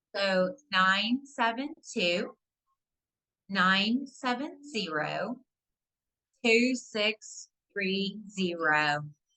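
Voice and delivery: slow, deliberate, carefully paced reading. Reading out a number again after being told to say it slower. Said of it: "I needed to say the number slower".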